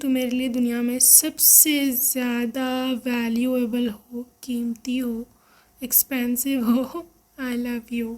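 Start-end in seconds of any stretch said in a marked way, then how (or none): none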